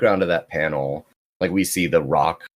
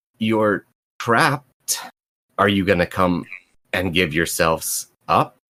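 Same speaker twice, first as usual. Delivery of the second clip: dry, hesitant, unsure male voice; 2 semitones higher than usual. Storyteller voices a thing calling down the hallway to trapped characters, dry, unsure voice. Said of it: "sounds very dry and kind of unsure of itself".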